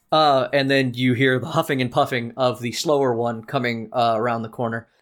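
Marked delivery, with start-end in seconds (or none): none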